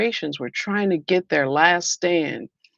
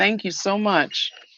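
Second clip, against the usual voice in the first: mocking sarcastic tone; 3 semitones higher than usual. Speaking to the daughter before signing off the stream: sarcastic. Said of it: "I'm being sarcastic".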